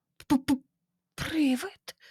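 stammering whisper. Reading a character stammering a question back at a storyteller, stammering whisper. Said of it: "Прошепотів сер Террі".

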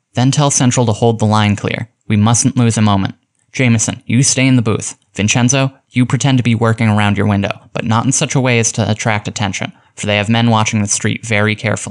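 ordinary delivery

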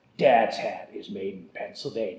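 deep, booming movie-trailer announcer voice. Reading an ad for Dad's Hat whiskey, movie-trailer announcer voice. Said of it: "I can do the movie guy".

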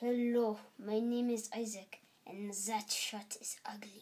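poor put-on French accent. In an accent guessing game, the speaker introduces himself in a bad French accent.

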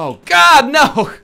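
shrill, very high, full-volume yell. While playing a game, the speaker suddenly yells. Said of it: "I didn't mean to yell there".

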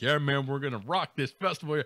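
ordinary talk

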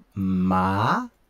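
pitch climbing upward through "ma". Explaining Vietnamese tones, rising tone on ma. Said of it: "se o tom é subir, ma, é para cima".

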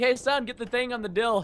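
offhand motherly voice, hesitating over a word. Retelling how a mom asks for things she can't name: imitating my mom. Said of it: "Did your moms ever do that to you".

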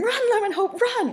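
high, loud shout.

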